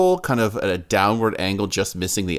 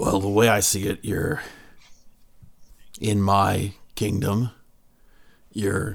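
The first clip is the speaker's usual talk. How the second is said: put-on kingdom ruler voice. Voicing Bestus Wrath Taint confronting the party in his kingdom: Bestus Wrath Taint voice. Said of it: "looks you in the eyes and says".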